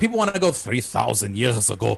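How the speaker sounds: put-on Israeli accent with French-style R sound. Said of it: "that's my Shimon Peres accent".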